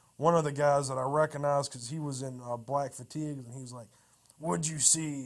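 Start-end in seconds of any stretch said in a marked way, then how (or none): 4.4-5.3 put-on growled voice, louder.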